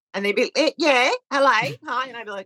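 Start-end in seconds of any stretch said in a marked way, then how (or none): 0.6-2.1 put-on Australian accent. Retelling how the Australian managers answered the phone, imitating an Australian accent. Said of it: "they were Australian".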